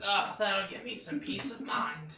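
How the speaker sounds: put-on elderly woman's voice. Voicing an old lady answering the party: old lady voice. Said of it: "but she says".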